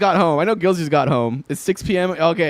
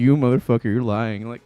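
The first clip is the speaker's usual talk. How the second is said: imagined cat voice, lower pitch; 7 semitones lower than usual. Voicing what the cat thinks while staring at the speaker: voicing his cat. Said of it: "My cat looking at me like".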